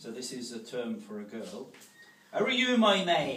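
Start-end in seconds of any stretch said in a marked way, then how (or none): 2.3-3.4 Devon accent, very loud. Giving an example of Devon slang for a girl, in a Devon accent. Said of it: "In the accent".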